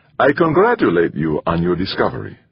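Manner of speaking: plain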